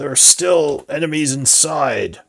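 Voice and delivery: growling, snarled voice. Narrating a game, the speaker voices a character who growls at the players: growled. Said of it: "He growls".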